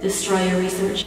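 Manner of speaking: deadpan, flat, level, toneless monotone. Quoting what one man told another, trying to keep a flat monotone. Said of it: "I'm trying so hard to be monotone".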